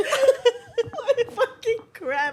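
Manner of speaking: slow, high groan with laughter.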